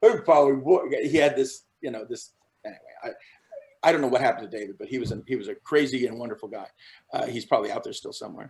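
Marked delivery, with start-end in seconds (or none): 0.0-0.8 loud, muffled voice spoken with finger in mouth. Showing how everyone imitated a castmate, finger in mouth: Dave Greenaway imitation. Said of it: "our Dave Greenaway imitation basically by putting our finger in our mouth".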